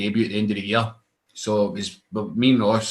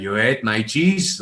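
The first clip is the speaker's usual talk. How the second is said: put-on German accent. Retelling how a man went off about his eaten cheese, in a German accent. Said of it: "in this German accent".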